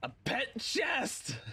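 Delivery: high, slow, excited exclaiming. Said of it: "I yell out in excitement".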